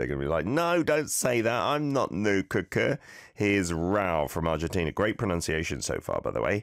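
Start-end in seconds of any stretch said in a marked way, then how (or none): 0.4-3.0 put-on irritated, put-out voice, high pitched. Acting out how someone would answer the teasing line: imitating an annoyed reply. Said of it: "it is gonna make someone annoyed".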